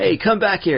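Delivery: mock shouting, high and yelled. Describing a cosplay crowd shouting after a sword taker, imitating someone yelling. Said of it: "somebody yells out".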